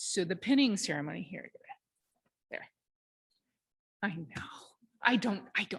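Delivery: tearful, choked-up voice holding back tears. Explaining the pinning ceremony to an audience, teary and choked up. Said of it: "it's just something in my eye".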